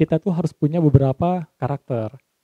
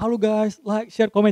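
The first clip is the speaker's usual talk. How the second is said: over-the-top, excessively hyped-up excitement; 6 semitones higher than usual. Coaching someone for camera, mocking an over-the-top style: Atta Halilintar YouTuber intro. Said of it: "terlalu berlebihan".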